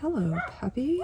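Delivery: quick puppy-talk voice.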